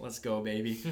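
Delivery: ordinary delivery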